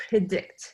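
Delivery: the word predict emphasized. A speaker explaining the goal of the algorithms, with stress on predict. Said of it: "I'm emphasizing the word predict".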